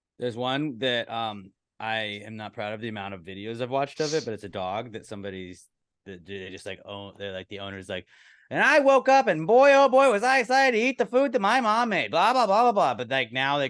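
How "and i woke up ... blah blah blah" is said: very high, shrill, loud, booming narrator voice. Retelling a TikTok where a dog narrates its day: imitating the TikTok voice. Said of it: "it's got the TikTok voice".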